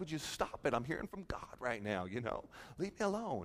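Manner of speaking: very quiet, low, hushed, annoyed and irritated tone. Retelling brushing off interruptions while praying over a young man, acting out annoyance. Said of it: "And I'm getting annoyed".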